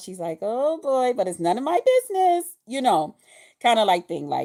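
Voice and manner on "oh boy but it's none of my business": sing-song, chuckling, with a light little laugh. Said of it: "with her little laugh and stuff".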